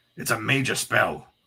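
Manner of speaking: rough demon voice touched with awe, awestruck. A demon reacts to the magic that sent others to limbo: rough voice touched with awe. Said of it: "his rough voice touched with an unaccustomed awe".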